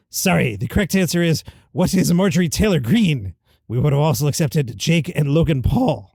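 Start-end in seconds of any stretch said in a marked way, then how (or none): none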